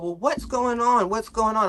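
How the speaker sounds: fake anger, high voice. Telling a story about Kenny and his girlfriend, retelling an angry outburst. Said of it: "I'm like, mad".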